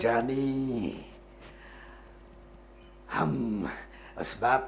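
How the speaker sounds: very slow, deep, breathy film-star drawl. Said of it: "आवाज़ सुनते ही आपको लगता है राजकुमार की याद आती".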